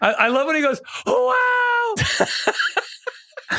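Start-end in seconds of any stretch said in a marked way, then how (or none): 1.1-3.6 put-on breathy announcer voice, much higher. Speaker loves how the game announcer sounds, doing a breathy announcer impression. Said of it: "It's so breathy".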